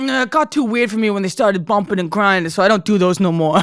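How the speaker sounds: put-on Long Island Italian accent, DJ-style. Retelling what a DJ said about proms: imitating a DJ in Long Island Italian accent. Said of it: "I'm making him, like, fucking Long Island Italian".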